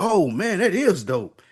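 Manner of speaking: very high, mock faux-impressed, sarcastic tone. Telling how he would have teased him back then, sarcastic mocking. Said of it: "I would have been fucking with him like".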